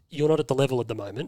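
mock deadpan, flat put-on delivery. Speaker recounts what a man told him in training, retelling a deadpan remark. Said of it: "he just deadpans".

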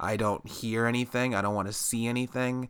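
ordinary delivery

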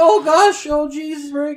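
very high-pitched, long drawn-out voice. Voicing Morty arriving through a portal: Morty voice. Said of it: "Morty shows up".

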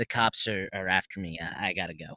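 ordinary talk

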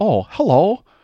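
affected put-on voice, pitched very high and very loud. Going for a bit of Walt Disney, switching into a Walt Disney voice. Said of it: "with the voice is".

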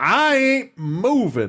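very high, swooping voice.

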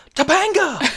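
mock, very high, sudden hollered yell. Retelling a scene where a character yells a name at a child: imitating Corey yelling. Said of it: "Corey looks at her and yells".

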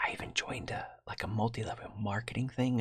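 hushed whisper. Recounting the time after a devastating loss, whispering an aside. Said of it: "I'm whispering that because".

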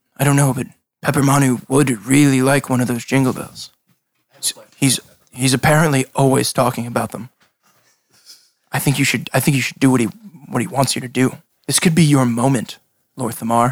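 speaking very quietly, hushed voice. Game master voicing a character who advises a player's character, speaking very quietly. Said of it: "We're speaking very quietly".

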